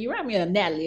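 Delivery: put-on man's Southern accent. Retelling what a man told the speaker, imitating his southern accent. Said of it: "He had a kind of southern accent".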